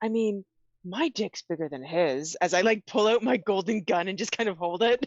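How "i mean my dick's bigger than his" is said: theatrical whisper that carries. A player leans over to a fellow character to boast, stage whisper. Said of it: "say in like a stage whisper".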